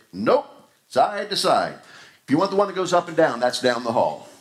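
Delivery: dry, matter-of-fact. Retelling a joke about a man asked if the elevator goes up, imitating a deadpan reply. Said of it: "He looked at him deadpan and said".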